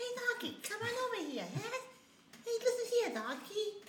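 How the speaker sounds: very high-pitched, hushed, barely audible voice. Imitating a boxer playing Shrek, Mike Tyson voice. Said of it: "That's how Mike Tyson talks".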